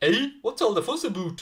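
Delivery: attempted Canadian accent. Asked for his best canadian accent, the speaker answers in a put-on canadian accent. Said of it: "That's my best attempt".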